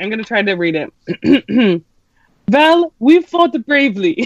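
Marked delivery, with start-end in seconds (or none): 2.5-4.3 bad put-on Bulgarian accent, pitched up. Reading the Bulgarian Minister of Magic's line aloud, in a horrible Bulgarian accent. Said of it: "Says a horrible accent".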